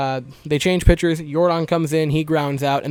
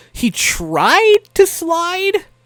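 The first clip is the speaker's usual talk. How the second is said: heavy stress on tried, stretched slow and high. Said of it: "I want to emphasize the word try".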